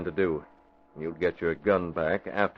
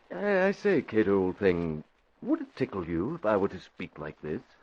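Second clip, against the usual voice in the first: put-on sing-song, swooping stage English accent. Trying out a voice on the valet before phone calls: Archie's stage Englishman voice. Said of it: "Like an Englishman on stage".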